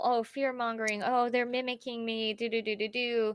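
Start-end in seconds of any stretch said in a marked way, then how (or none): none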